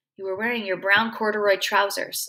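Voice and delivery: plain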